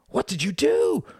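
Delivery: very high-pitched cry, called out. A boy runs to his fallen brother and cries out to the attacker. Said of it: "cried the brother".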